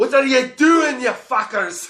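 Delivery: put-on piercing, very high, loud Scottish accent yell. Retelling a scuffle behind them, quoting a man in a Scottish accent. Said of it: "in a Scottish accent too".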